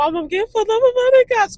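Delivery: mock crying, very high and loud. Retelling calling her mom after getting pulled over: imitating herself crying.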